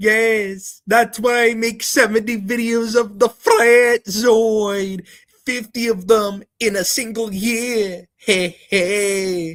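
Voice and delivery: very high, squeaky put-on caricature voice, drawn-out "hey". Speaker doing a bit about someone's videos, impression of a disliked person. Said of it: "that's my impression of that ass".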